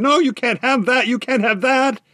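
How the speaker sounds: very high, shrieking, protesting cry. A wood sprite stops a fiddler reaching for a box: screaming. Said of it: "the wood sprite screamed".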